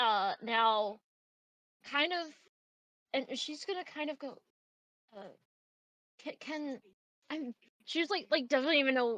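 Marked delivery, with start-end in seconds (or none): 6.2-7.5 quiet, nervous, stammering start. Voicing a character starting to ask a question: stuttering nervous start. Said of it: "kind of stuttering over herself".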